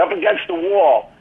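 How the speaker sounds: ordinary delivery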